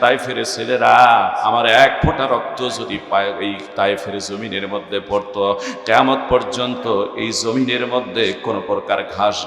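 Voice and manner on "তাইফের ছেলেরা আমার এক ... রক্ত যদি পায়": plain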